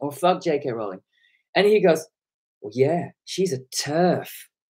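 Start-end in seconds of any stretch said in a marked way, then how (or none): 2.6-4.3 put-on disgusted tone, slower. Retelling how a man answered her, imitating his disgusted tone. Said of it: "the way he said TERF with that real disgust".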